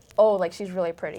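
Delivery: ordinary talk, nothing marked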